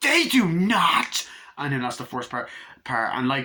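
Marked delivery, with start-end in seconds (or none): 0.0-1.3 play-acted, very high, very loud raging outburst. Retelling a film scene where she objects to profanity: imitating someone in a rage. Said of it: "the rage scene is scary".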